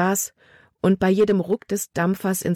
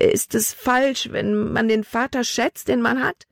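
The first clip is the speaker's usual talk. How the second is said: quavering, trembling, pitched-up voice; 5 semitones higher than usual. The captain's daughter answers back, her voice trembling. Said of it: "Libbys Stimme zitterte".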